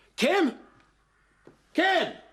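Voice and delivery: very high, loud shouted call. Calling out a name after ending a phone call: shouting. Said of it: "when I heard you shouting like that".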